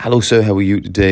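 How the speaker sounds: put-on, falsely polite, snide, mocking sarcastic tone. Showing how a pupil greets a teacher while taking the mick: imitating a sarcastic pupil. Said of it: "you sense there's a tone".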